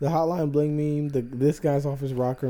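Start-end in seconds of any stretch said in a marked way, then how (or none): none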